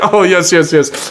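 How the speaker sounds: slight put-on French accent, breezy and agreeable. Retelling Carl giving the speaker a tour, in Carl's French accent. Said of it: "and his little French accent".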